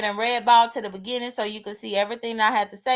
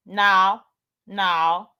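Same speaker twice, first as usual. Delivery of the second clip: normal talking voice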